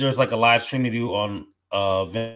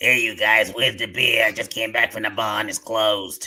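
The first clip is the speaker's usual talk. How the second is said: strong put-on Boston accent. Acting out an ASMR role play of a drunk aunt at Thanksgiving: put-on strong Boston accent. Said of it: "really strong, like, Bostonian accent".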